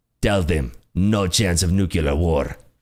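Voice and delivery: bad, clumsy, heavily laid-on put-on Russian accent. Acting out a Putin scene, in a bad Putin accent impression. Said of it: "That's, by the way, the worst Putin accent ever".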